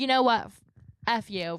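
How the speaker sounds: put-on, eye-rolling, dismissive, mocking defensive voice. Imitating Amanda brushing off her critics: imitating Amanda rolling her eyes. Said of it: "rolling her eyes".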